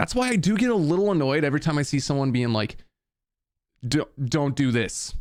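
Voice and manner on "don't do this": put-on snobby tone, much slower. Mimicking people who lecture others about music production, mock snobby tone. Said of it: "they say it in like a snobby way".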